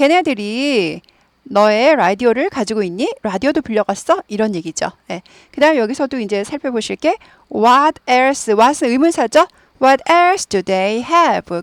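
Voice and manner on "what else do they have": pitch drops at the end on have. English lesson, question with the wh-word what: falling pitch on final have. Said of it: "끝이 내려가야 되죠".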